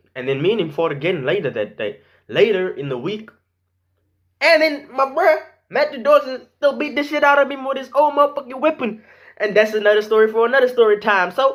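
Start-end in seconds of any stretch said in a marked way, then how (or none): 4.4-9.0 loud, weird, goofy, coaxing tone. Asking viewers to drop a like on the video: loud and weird. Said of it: "So very loud and shit".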